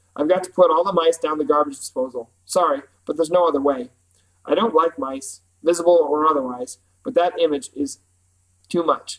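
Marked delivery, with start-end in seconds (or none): none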